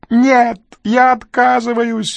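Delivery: screeching, shrill, very high yell. A narrator reads a man refusing as he backs away, yelling. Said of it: "заорал Крю".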